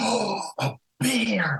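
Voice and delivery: high, slow, utterly amazed wonder. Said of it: "I was utterly amazed".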